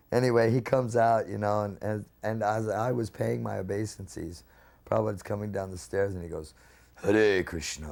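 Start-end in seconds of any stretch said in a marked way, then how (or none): 6.9-7.9 dark, deep, low voice. Retelling Prabhupada coming down the stairs, say it in Prabhupada's dark, deep voice. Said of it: "in this real dark, deep voice".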